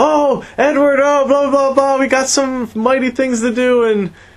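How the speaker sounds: put-on excited gush, pitched very high. Retelling a scene where he walks in to Edward: imitating someone excited. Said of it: "he's all excited".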